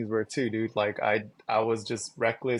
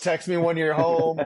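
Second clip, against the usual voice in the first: high, raised, anxious mom voice; 5 semitones higher, 5 dB louder than usual. Doing the mom voice after another speaker asks for it: mom voice. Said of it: "Do the mom voice".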